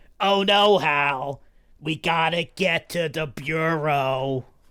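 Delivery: slow, raspy little goblin voice. Showing how a character named Lily should sound: little chain-smoking goblin voice. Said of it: "Lily would probably talk something like this, like a little goblin".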